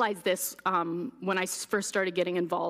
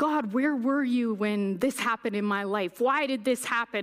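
put-on angry screaming man voice; 4 semitones higher than usual. Retelling how a man yelled at god, acting out his screaming at heaven. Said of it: "he's just screaming at heaven and shaking his fist".

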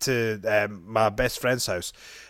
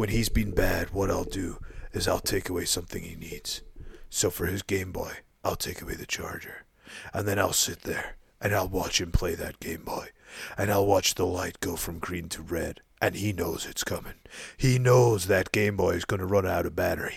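put-on gruff American voice, lower and quieter; 5 semitones lower, 6 dB quieter than usual. Retelling a director's disciplining story in a Clint Eastwood voice. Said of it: "an American sort of, uh, sort of, um, Clint Eastwood".

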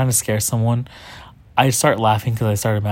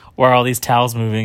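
ordinary talk

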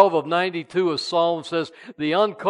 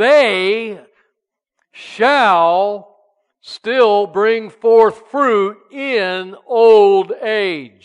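loud, very slow, proclaiming reading voice; 3 semitones higher, 7 dB louder than usual. Reading a Bible verse aloud to the congregation: reading scripture very loudly. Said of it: "I'm gonna read it real loud".

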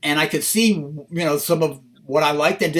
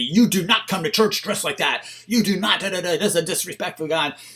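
put-on yelling voice; 2 semitones higher than usual. Retelling what a livid priest said: imitating someone yelling. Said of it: "He's yelling at me".

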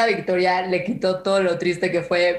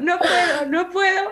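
very high, tearful, drawn-out sobbing; 12 semitones higher than usual. Retelling crying during the anthem while her brother is embarrassed, acting out crying. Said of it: "yo ya mar de lágrimas".

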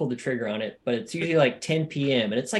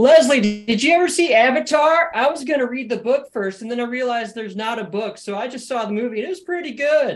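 loud, shrill, very high-pitched yelling; 9 semitones higher, 7 dB louder than usual. Retelling a favourite TV scene where a park ranger starts shouting: imitating Andy Samberg shouting. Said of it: "he just starts shouting".

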